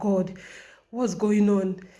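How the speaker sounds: mock loud, distressed sobbing outburst. Recounting breaking down over a ticket mistake, retelling own crying. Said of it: "I was just crying like".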